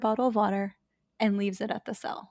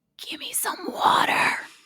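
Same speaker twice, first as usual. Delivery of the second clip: hoarse, raspy, breathy whisper; 13 semitones higher than usual. Retelling a story, voicing the voice a woman heard on a fort tour: raspy voice. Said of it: "A raspy voice".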